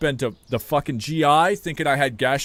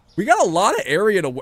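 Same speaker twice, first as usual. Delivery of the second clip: voice breaking, cracking up high; 5 semitones higher than usual. Speaker talking to chat about filling store space, voice cracking. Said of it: "I don't know why my voice cracked".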